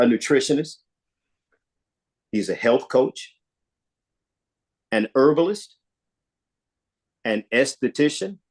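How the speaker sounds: slow reading pace. Reading a list of a man's credentials aloud so everybody hears, reading slowly. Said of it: "I was going to have to say that one slow".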